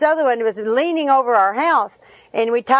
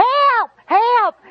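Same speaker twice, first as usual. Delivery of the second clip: mock very high screamed cry; 10 semitones higher, 3 dB louder than usual. Telling how they held a leaning tree alone, re-enacting screaming for help. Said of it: "I'm screaming".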